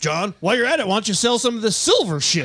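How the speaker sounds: put-on huckster ranting voice.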